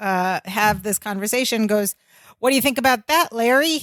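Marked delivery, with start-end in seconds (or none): 2.4-3.8 prodding tone, higher pitch. Retelling a TV scene, imitating Marianne prodding. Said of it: "as if prodding Jennifer".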